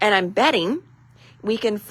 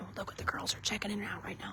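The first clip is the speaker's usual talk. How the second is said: very soft, secretive, hushed whisper under the breath; 17 dB quieter than usual. Watching the girls check in brand new products, the speaker is whispering. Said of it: "I don't know why I'm whispering".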